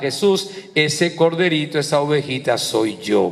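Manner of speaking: normal talking voice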